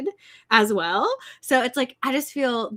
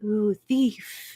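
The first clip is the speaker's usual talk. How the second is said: put-on creepy little old lady voice. Speaker retelling a story scene to a co-host, creepy little old lady voice. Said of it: "this little old lady voice".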